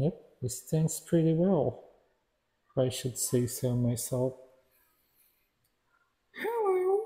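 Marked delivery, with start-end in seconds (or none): 6.3-7.0 very high, soft parrot voice. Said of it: "that's my parrot voice".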